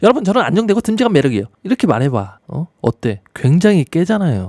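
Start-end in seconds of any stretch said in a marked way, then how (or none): 0.0-1.5 high-pitched, rushed chatter with words tumbling out. Showing how a voice lacking calm credibility sounds: raised, rushed voice. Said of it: "내가 갑자기 목소리 톤을 올려가지고 이렇게 말을 막".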